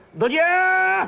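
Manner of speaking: high, loud street call, calling out.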